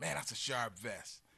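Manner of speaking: ordinary talk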